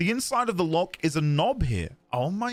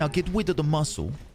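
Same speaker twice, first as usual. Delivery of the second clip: put-on cutesy uwu voice. Speaker retells how a man sounded saying something, imitating an uwu voice. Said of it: "he was speaking with an uwu voice".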